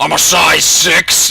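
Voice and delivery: very slow, drawn-out, rough, creaky voice. Imagining Satan shopping for clothes: imitating Satan. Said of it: "You can just imagine Satan going in there".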